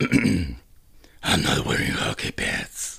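gravelly, creaky heroic character voice. Showing off an impression you think you do well, Batman in The Dark Knight: Batman impression. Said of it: "este soy yo imitando a Batman".

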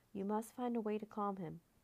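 ordinary delivery

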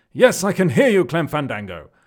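loud, booming, projected voiceover voice. Quoting a famous catchphrase from the show: Matt Berry voice. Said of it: "that's my impression of Matt Berry".

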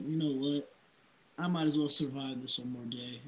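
ordinary talk

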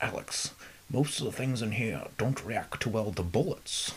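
put-on Scottish film-star accent. Quoting a movie line: Sean Connery impression. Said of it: "Sean Connery".

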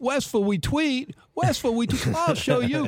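very high, squeaky cartoon voice, every r as w. Retelling a favourite cartoon scene: Elmer Fudd voice. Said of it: "a couple different Elmer Fudds ... where he's".

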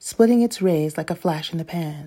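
plain reading voice

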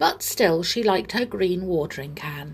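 ordinary delivery

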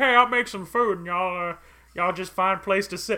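put-on old swamp man voice. Retelling how the swamp man greets guests at his shack: imitating an old swamp man. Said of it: "he's just like".

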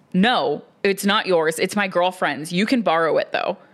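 mock firm, stern scolding voice. Retelling how an actor friend scolded them, in a mock-stern scolding voice. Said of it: "in a stern voice, he scolds me and says".

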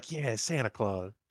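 mock beaming, glowing joyful cheer. Retelling a movie scene where Charlie beams: imitating beaming Christmas joy. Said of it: "all beaming with Christmas spirit".

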